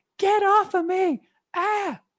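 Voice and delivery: acted shrieking, piercing high-pitched screaming yell. Telling a story, acting out a woman screaming at the man behind her. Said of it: "she immediately screams and she's like".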